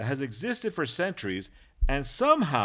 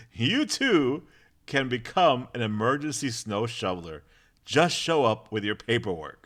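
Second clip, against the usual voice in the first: ordinary talk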